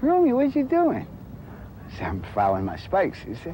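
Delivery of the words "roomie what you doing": voice pitched way up, very high. Retelling your roommate's question as you filed your spikes, in a high-pitched Willie Crawford voice. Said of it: "had a high-pitched voice".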